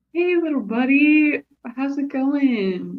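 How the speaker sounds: chummy, buddy-buddy, extra-friendly, high voice. Approaching a creature in character to greet it: extra friendly. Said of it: "I'm gonna be extra friendly".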